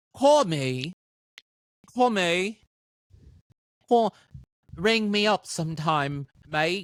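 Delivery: failed fake British accent. Asking how to say it in british, the speaker tries an attempted british accent. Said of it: "What do I do in British?".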